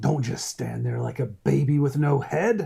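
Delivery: rough, creaky, scraping character voice. Reading quotes from a quote mug in a Helmer voice. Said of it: "your best Helmer voice".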